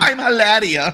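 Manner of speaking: high, try-hard voice. Mocking Alec Baldwin's wife, who is from Boston: mocking Hilaria Baldwin impression. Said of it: "like fucking Alec Baldwin's wife that's from Boston".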